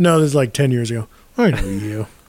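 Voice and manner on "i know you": low muttering under the breath. Retelling a stranger's words on a plane: imitating someone muttering under his breath. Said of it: "under his breath".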